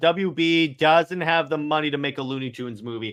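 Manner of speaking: plain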